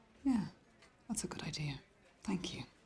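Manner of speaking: sarcastic put-on thankfulness, mocking agreeable tone. Replying to a colleague's suggestion about threatening suspects: sarcastic. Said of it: "Is she being sarcastic?".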